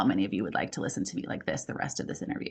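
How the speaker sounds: soft, breathy glottal fry throughout. Demonstrating a voice quality during an interview, speaking in vocal fry. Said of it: "This is glottal fry or vocal fry".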